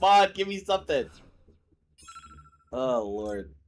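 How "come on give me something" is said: mock very high, very loud, pissed-off angry yell. Imitating the opponent who is pissed right now: imitating a pissed-off opponent. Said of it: "I know he's pissed as shit right now".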